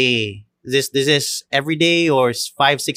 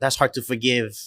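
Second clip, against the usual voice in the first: ordinary talk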